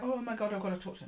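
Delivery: sudden, loud, rushed, panicky outburst. Acting out someone rushing in to say something: imitating a panicked person. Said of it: "I'm getting more of a panicked energy".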